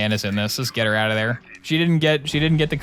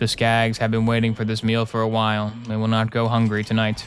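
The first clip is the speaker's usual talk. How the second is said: put-on deeply sorrowful, very sad, mournful voice. Speaker imagines a Borderlands four plot line, imitating Tannis in a very sad voice. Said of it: "she'll like say in a very sad voice".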